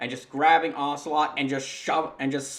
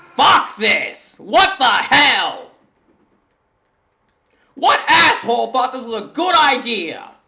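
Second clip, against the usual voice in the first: all-out, very loud, high-pitched yelling; 9 semitones higher, 12 dB louder than usual. Reacting to a game's cutscene design, yelling. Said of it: "Sorry for yelling".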